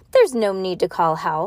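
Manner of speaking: usual speaking voice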